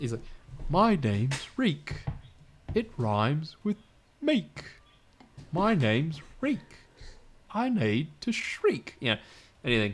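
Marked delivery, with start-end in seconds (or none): 0.7-8.9 slow goofy voice, pitched up, swooping around. Imitating Roy Dotrice saying Reek's lines after being asked: slow goofy Roy Dotrice voice. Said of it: "so slow, but in such a goofy voice".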